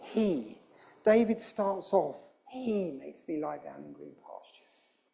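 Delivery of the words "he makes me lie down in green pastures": strongest stress on he. Reading a psalm line that is about god, strong stress on he. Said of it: "This is all about God. He".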